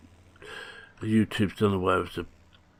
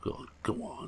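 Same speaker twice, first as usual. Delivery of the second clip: high, soft coaxing tone. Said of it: "mustn't plead".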